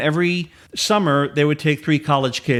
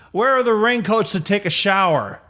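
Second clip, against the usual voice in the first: mock bellowing drunk man voice, pitched up; 6 semitones higher than usual. Speaker retells a man who came in and bellowed at them: retelling a man bellowing. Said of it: "just bellows at me and says".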